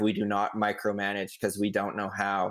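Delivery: plain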